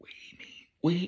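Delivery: high, hushed, barely-there half-whisper. Retelling what she said while listening in with her mom, half-whispering. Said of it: "I'm whispering".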